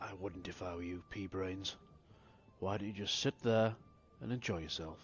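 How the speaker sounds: rasping, dry-throated delivery. The game master, as Max, speaks to a player's character in a dry, rasping voice. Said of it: "in a dry, rasping voice".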